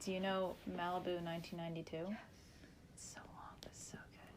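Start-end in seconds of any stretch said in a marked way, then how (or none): 2.9-4.3 barely audible, very quiet whisper. Speaker in a chat about favorite songs, said really quietly. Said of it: "I said that really quietly".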